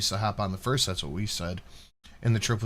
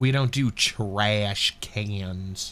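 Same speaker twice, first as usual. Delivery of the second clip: put-on southern drawl, "cans" drawn out. Repeating a line the way Drunkle says it, in Drunkle's southern accent. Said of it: "sounded like a southern accent".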